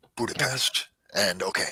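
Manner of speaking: soft mutter under the breath. After being told the floor and apartment number, muttering under breath. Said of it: "I mutter under my breath".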